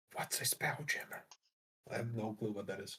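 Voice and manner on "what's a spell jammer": whispering, quieter. A player asks Ari, on their shoulder, a question, whispering. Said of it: "I'm just whispering to her".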